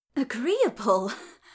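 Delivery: breathless, out of breath. Asked whether the arrangement is agreeable to her, she replies, breathless. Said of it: "she said breathlessly".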